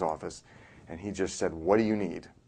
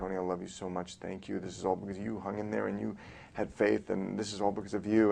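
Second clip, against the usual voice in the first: put-on tearful, crying woman's voice, quieter; 4 dB quieter than usual. Retelling what Betty Ann said that night, imitating her crying. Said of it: "and she's crying".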